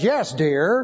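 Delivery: ordinary talk, nothing marked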